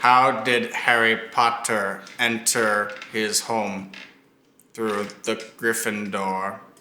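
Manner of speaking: slow drawled character voice, each word dragged out. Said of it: "you have to use a voice".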